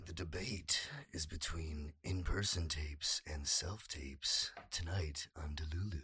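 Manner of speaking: over-the-top, theatrical, very dramatic delivery. An actor, urged by another speaker, says the debate topic really dramatically. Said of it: "Say it like really dramatically".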